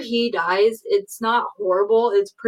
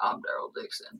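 breathy, whispered put-on voice. Quoting a line from the new trailer in a Daryl Dixon voice. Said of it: "your best Daryl Dixon impression".

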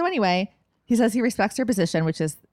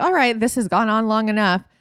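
ordinary talk, nothing marked

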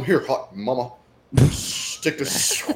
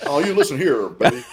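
acted cartoon hunk character voice. Speaker tries out a new impression for the others, Johnny Bravo voice. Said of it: "that's a new impression".

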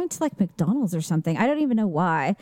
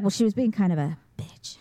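imitated secretive whisper, faster; 2 semitones lower than usual. Retelling how her mom remarks on another woman: imitating a whispered aside. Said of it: "she'll even look around".

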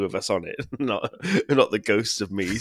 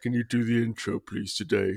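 put-on droopy, glum, sad, mopey delivery; 4 dB quieter than usual. Retelling a friend's request to do the intro: imitating a sad mopey plea. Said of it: "he looked so sad and mopey, and he went".

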